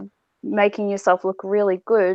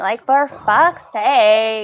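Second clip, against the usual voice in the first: put-on Valley Girl accent, higher and louder; 3 semitones higher, 6 dB louder than usual. Mocking the advice column's answer: Valley Girl voice. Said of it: "Dork does a convincing Valley Girl".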